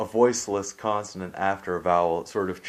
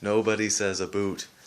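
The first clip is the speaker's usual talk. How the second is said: ordinary talk, nothing marked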